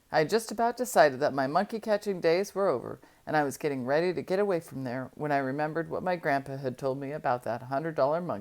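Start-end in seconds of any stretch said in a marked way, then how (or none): none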